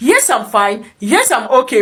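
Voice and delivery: normal talking voice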